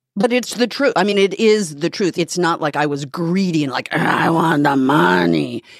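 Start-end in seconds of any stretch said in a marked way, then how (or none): 4.0-5.6 very slow, rough, drawn-out demonic growl. Denying having been greedy, voicing the idea in a Mercedes McCambridge Exorcist voice. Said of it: "That was a good voice".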